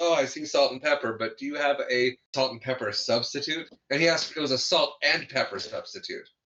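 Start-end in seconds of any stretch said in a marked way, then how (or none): none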